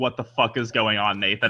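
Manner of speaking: acted shocked, freaked-out outburst. Retelling a shocked reaction while watching with nathan: imitating own past freak-out. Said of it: "I literally was like".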